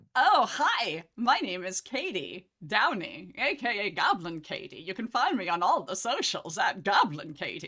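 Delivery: strange affected put-on voice. Introducing yourself to a live-play game audience, in an odd put-on voice. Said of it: "I don't know why I'm talking like this".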